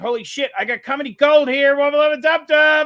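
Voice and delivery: loud, high-pitched cartoon character voice. Playing the card deck in character: Rick voice. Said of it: "reading it in your Rick and Morty voice".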